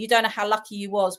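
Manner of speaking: plain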